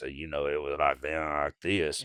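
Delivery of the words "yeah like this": husky, scraped-out, raspy and hoarse voice. Showing how the voice sounded after hours in the recording booth: raspy voice. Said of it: "I had more of a raspy voice".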